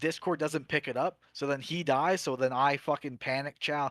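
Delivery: plain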